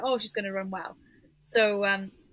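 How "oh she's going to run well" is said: ordinary talk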